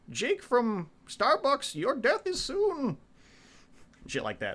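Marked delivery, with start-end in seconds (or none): 0.1-2.9 very high, slow, stretched-out silly villain voice. Describing a villain's shtick in a show, stupid Bane voice. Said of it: "In his stupid Bane voice".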